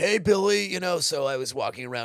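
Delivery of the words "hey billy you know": very high, loud, cartoonish voice. Actor recalls voice training classes, showing how he learned to talk: Billy's dad voice. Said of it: "I learned to talk like Billy's dad from Billy and Mandy".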